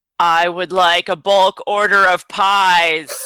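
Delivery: booming, resounding, distant-sounding call, "pies" drawn out. Player makes their voice boom so it seems to come from the road: booming voice. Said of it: "I'm going to make my voice boom".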